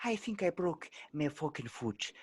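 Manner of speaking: put-on gentle, high-pitched Irish accent. Retelling a line an Irish coworker once said, in an Irish accent. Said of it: "best accents in the world is Irish".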